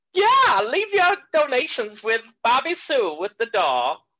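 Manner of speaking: high-pitched Southern sermon voice. Asked about saying thanks in a voice, showing off a Southern Baptist voice. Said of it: "my Southern Baptist voice".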